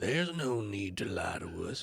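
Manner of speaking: put-on voice with a slight lisp added. Voicing a character in someone else's voice, imitating another player's voice. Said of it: "Don't take my voice".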